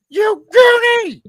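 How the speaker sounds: mock enraged shriek, very high and very loud. Describing a favorite movie scene where a guy yells down a well, retelling an angry yell. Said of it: "Just yells down the fucking well, like so mad".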